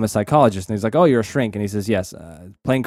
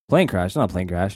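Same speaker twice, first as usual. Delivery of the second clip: put-on nonchalant, casual delivery; 2 semitones lower than usual. Retelling a character's line to a scientist: imitating a nonchalant delivery. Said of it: "very nonchalantly".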